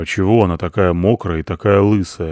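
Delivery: ordinary delivery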